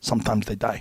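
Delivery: put-on Korean accent. Retelling what an intense former troop trainer said when someone never got up, thick Korean accent. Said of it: "with his thick Korean accent".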